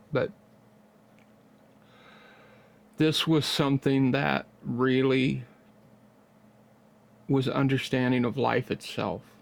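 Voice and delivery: choked up, voice thick with emotion. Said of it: "Excuse me for being kinda choked up".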